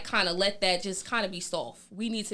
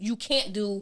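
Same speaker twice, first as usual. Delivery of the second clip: normal talking voice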